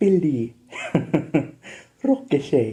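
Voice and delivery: put-on Italian accent. Retelling how their teacher with an Italian accent called their names, imitating teacher's Italian accent. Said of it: "when she spoke in her accent".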